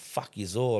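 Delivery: acted menacing, threatening, spoiling-for-a-fight tone. Retelling what he said from the van corner to everyone, mock-threatening. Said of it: "like I was going to knock him out".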